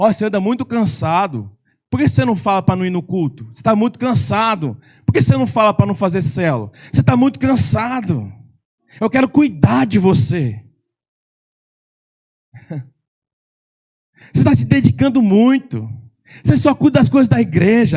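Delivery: coaxing, tempting, caring-sounding voice close to ear. Preaching, acting out a voice that comes into the listener's ear: tempting voice in your ear. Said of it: "aquela voz vindo no teu ouvido".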